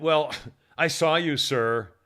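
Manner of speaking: snooty, condescending, drawn-out waiter voice. Retelling what a waiter said when he came over: imitating a snotty waiter. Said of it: "one of those really snotty".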